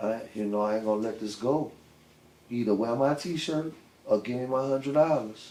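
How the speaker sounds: hushed stage whisper under the breath. Retelling words said after handing over a t-shirt: retelling a half-whisper. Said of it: "and I whispered".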